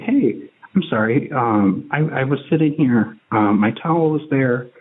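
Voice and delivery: very courteous, polite Midwestern manner. Retelling what was said to a stranger at the pool: retelling a very polite reply. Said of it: "very polite".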